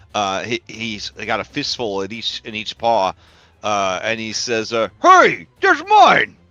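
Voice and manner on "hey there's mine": mouth full, much higher and louder. A character caught with stolen bones stuffed in his mouth, talking with mouth full. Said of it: "his mouth full of peanut butter bones".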